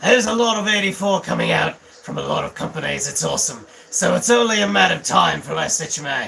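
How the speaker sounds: put-on brutish orc voice, loud and swooping. Reading a written comment aloud as a joke: orc voice. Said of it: "I'm gonna read this one like an orc".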